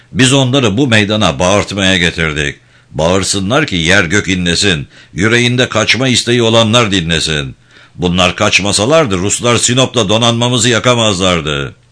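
ordinary delivery

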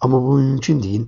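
ordinary delivery, nothing marked

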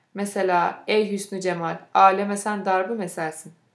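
ordinary delivery

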